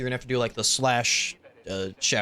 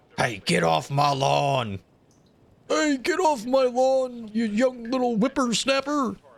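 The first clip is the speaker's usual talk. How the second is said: put-on very high elderly man voice; 11 semitones higher than usual. Speaker tries out an old man voice, old man voice. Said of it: "I don't know how to do an old man voice".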